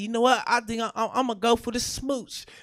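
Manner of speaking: ordinary talk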